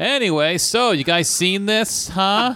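put-on heavy sarcasm, very high, very drawn out. Showing how they used to entertain themselves, retelling a sarcastic bit. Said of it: "I would just get real sarcastic with the bit".

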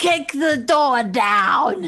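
high, slow, loud shouted battle cry.

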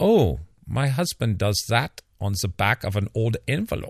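put-on polite German accent. Retelling the wife's quip about her husband, in a polite German accent. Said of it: "in a wonderful polite german accent".

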